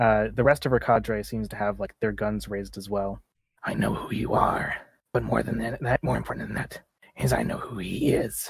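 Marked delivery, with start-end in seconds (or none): 3.6-8.5 rough, creaky, scraped-out rasping voice. Voicing a woman close to someone's ear while her cadre raise guns, raspy voice. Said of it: "She rasps out".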